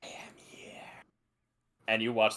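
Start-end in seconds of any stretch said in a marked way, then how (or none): 0.0-0.8 eerie, ghostly, barely-there whisper. Voicing a spell that whispers to spook two students: eerie spell whisper. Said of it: "a thaumaturgy whisper and goes".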